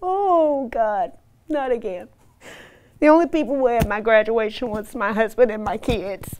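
tearful, crying speech. Telling her own story as she breaks down again, crying.

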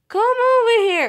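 loud, high-pitched calling out.

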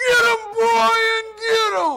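very loud, high, shrill, drawn-out yell. Retelling a wrestling match, imitating dad yelling. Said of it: "my dad yells out".

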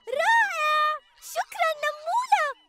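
very high-pitched, delighted, joyful shout. The narrator reads the ants thanking the ant who found the food: cheering joyfully. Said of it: "هتفت النملات فرحات".

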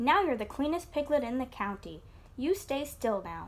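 ordinary delivery

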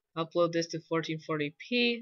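normal talking voice

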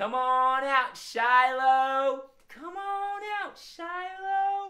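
tiny sweet voice, very high, very slow. Leading everybody in calling out Shiloh the squirrel: sweet little voice. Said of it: "Let's call him out in a sweet little voice".

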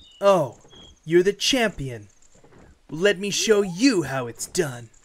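smug anime-style character voice. Speaker deciding whether to voice Revali tries the voice; Revali voice. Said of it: "Revali just talks like this".

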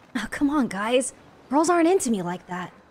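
put-on voice, played for laughs, pitched low. Doing an impression of someone the group is discussing: impression of another person. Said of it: "I can do an impression of him".

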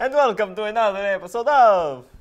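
awful put-on Italian accent. Host opening an episode for viewers, bad italian accent. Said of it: "the worst Italian accent I've ever heard".

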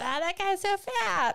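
too-loud blurt, high and slow. Retelling a remark about a nearby diner: retelling saying it too loud. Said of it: "maybe a little bit too loud".

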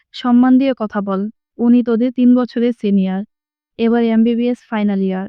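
ordinary delivery, nothing marked

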